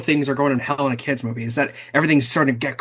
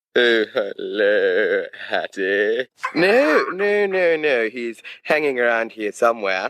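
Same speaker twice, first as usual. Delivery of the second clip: put-on smug, grinning voice; 3 semitones lower than usual. Retelling a favorite movie moment, acting out a character's line with a shit-eating grin. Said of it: "with like the most shit-eating grin imaginable".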